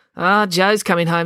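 ordinary delivery

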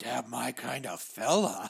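slow, raspy, creaky, dragged-out drawl. Retelling a Muppet Family Christmas scene: Animal voice. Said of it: "an animal walks up and his eyes are just wide and he goes".

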